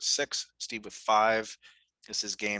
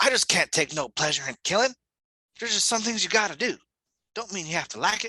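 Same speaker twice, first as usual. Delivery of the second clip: very high, light, loud, slight Southern drawl; 9 semitones higher, 5 dB louder than usual. Reading a character's lines again, this time doing a voice, in a southern drawl. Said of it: "I detected a little southern drawl".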